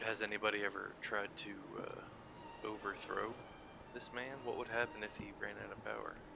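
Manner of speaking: very quiet, hushed, leaned-in whisper. A player's character leans in close to ask a question, whispering. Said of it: "I'd like to lean in and whisper".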